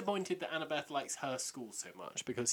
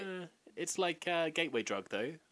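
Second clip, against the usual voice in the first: plain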